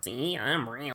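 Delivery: quiet, slow mockery. Reviewing a game scene's line delivery, mocking Maria's line.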